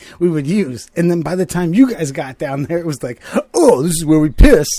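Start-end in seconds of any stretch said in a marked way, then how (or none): 3.5-4.7 very loud, dopey, stupid-sounding skater-dude voice. Retelling what a guy said about where they piss, stupid skater dude tone. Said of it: "some stupid ass fucking skater dye tone".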